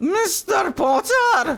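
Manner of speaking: put-on prim Edinburgh Morningside accent. Speaker does a line as raging Professor McGonagall, in that Morningside accent. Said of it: "It's that Morningside accent".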